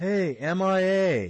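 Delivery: high, slow, loud shout. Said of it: "he shouts out to Woodson".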